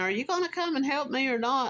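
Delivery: acted high-pitched holler. Retelling what a stranger kept yelling at him: imitating someone yelling. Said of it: "the guy kept yelling at me".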